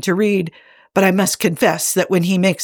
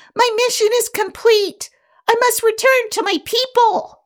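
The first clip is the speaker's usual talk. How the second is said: small, tiny squeaking voice, very high. Reading a story aloud, voicing the speck caught in Spock's hands: tiny squeaky voice. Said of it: "A tiny voice squeaks".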